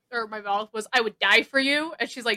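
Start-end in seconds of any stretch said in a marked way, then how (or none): 0.9-1.9 loud, panicked words bursting out. Retelling what was blurted out on first meeting someone: imitating own panicked blurt. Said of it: "kinda just panicking".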